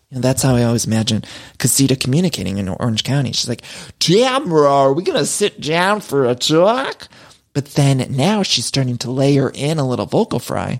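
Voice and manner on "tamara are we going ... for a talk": slow whale voice, every word drawn out. Imagining how Casita communicates with Tamara, like Dory talking to the whale. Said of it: "she sounds like Dory from Finding Nemo when Dory's trying to talk to the whale".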